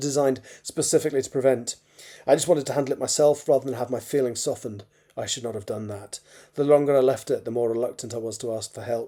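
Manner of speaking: usual speaking voice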